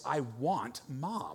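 soft, mock voice dripping with utter disgust. Parent retelling what the child said after she stopped crying, mimicking disgust. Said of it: "says with absolute disgust in her voice".

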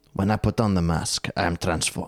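low-pitched, put-on Romanian accent. Reading a quote about masks to the other speaker, put-on romanian accent. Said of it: "Don't do the accent".

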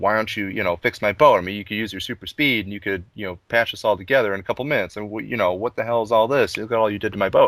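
ordinary talk

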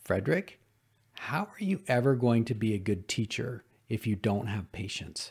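mock steady, firm, gentle, kind tone. Recalling his coach's words to him, quoting them in a firm but kind voice. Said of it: "in a firm but kind voice".

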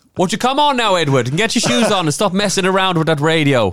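very high-pitched, put-on Irish accent. On the radio, telling edward to stop messing with the radio: put-on irish accent. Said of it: "I've gone very Irish now".

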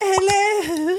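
put-on British accent, very high and drawn out. Answering a knock at the door: put-on british accent. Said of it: "I was just doing an accent".

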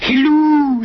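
very high, sweet, sugary cooing. A woman answers the telephone, cooing. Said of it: "she cooed".

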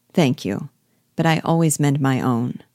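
plain reading voice

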